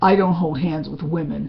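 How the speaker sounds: put-on hurtful, spite-laced tone. Retelling what their mother said when they tried to comfort her, imitating a spiteful voice. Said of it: "in this kind of spiteful voice she said".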